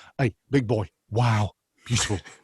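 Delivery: animated chef voice with odd word stress. Showing how to do Gordon Ramsay, animated: Gordon Ramsay impression. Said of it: "accenting certain words which don't make sense".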